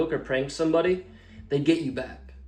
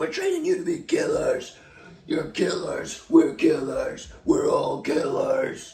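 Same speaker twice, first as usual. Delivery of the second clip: drill sergeant voice, pitched high; 11 semitones higher than usual. Retelling what the drill sergeants told the trainees: imitating a drill sergeant. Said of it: "Our drill sergeants".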